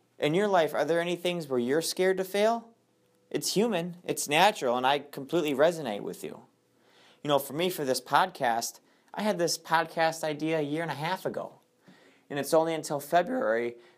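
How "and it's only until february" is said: cracking, breaking voice. A podcast host talks to listeners about fear of failing, voice cracking. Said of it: "my voice just cracked there".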